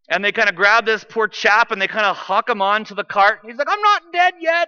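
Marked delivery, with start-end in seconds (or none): 3.7-4.7 bad fake British accent, very high pitched. Retelling a man on the cart of bodies protesting, in a terrible British accent. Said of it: "That's a terrible accent".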